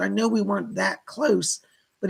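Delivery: ordinary talk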